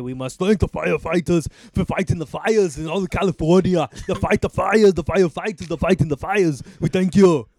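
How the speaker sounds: loud, impassioned, passionate proclaiming delivery. With others discussing California being on fire: passionate Arnold Schwarzenegger impression. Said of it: "As Arnold Schwarzenegger would passionately say".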